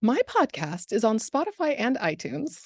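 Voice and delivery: swooping radio ad announcer voice. Asked by the host where to find the podcast, the guest answers in radio marketing voice. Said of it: "in my best radio marketing voice".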